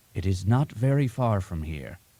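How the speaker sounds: whispering. Reading a story where the master answers: whispering. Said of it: "he whispered".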